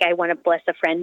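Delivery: ordinary delivery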